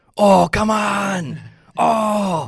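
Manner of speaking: very high, loud yell, the "oh" drawn out. Retelling hearing a yell echo through a quiet building: bad Patric Hornqvist impression. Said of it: "pardon the bad impression".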